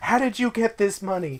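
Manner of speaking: play-acted, very high, alarmed, freaked-out voice. Recalling coming home at eight with money, imitating a freaked-out aunt. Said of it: "my aunt was freaking out".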